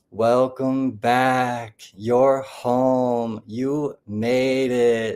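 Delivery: slow, drawn-out, glowing, happy, almost level tone. Retelling how the ones surrounding the speaker welcomed them, imitating drawn-out happy monotone. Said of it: "They're very drawn out, almost monotone, but super happy".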